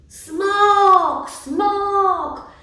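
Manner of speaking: very high, loud, drawn-out shriek. Narrator voicing a crowd chasing the dragon with sticks and stones, screamed. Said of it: "Wrzeszczeli oni".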